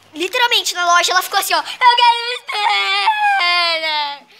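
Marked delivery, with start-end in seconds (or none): 1.6-4.2 put-on very slow sobbing whine, wailing, stretched out. Retelling a scene in a shop over a spinner, imitating Melissa's crying tantrum. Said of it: "ela ficou chorando, gritando, esperneando".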